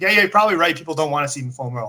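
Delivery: dry, sarcastic, insincere tone. Retelling a reply to a girl at the gym: imitating own sarcastic reply. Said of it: "I just was sarcastic with you".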